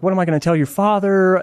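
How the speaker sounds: put-on, high, hysterical, sobbing, pleading. Retelling a phone call from the speaker's mom, imitating hysterical sobbing. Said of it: "she's sobbing, like hysterical".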